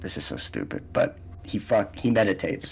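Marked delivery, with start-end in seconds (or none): 0.0-0.8 whispered, grumbling mutter under the breath. Narrating his character back on a park bench, muttering under his breath. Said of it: "under his breath, kind of mutters".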